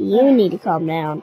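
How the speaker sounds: stress on you. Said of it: "I need to calm down".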